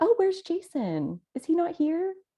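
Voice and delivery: effusive, gushing manner of speaking.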